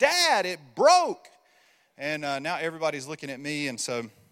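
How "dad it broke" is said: put-on very loud, high, top-of-lungs child's scream. Retelling his kid with headphones on screaming at him, retelling a top-of-lungs scream. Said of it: "screams at the top of his lungs".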